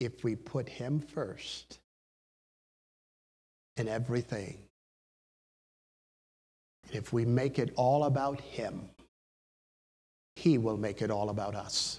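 slow, measured, deliberately unhurried delivery. Addressing listeners in this country and others, intentionally slowed-down speech. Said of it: "I intentionally slowed down my voice and my speech".

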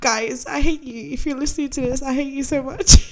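high voice, talking through real tears. Speaking to her friends who are listening, crying. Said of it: "I'm actually crying".

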